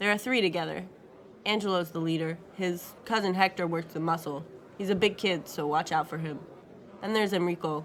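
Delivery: ordinary delivery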